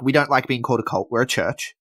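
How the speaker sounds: imitated flat deadpan. Retelling a wrestler's reply after being called a cult leader: mock deadpan reply. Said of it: "just the deadpan".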